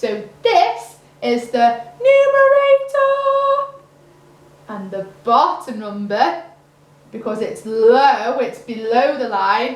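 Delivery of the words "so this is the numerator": very high, drawn-out numerator voice. Teaching fractions, the speaker shows listeners how to say the top number: saying numerator in a high voice. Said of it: "we are going to always say numerator in a high voice".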